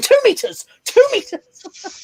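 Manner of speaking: high-pitched, slow, called-out voice. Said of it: "when they're going".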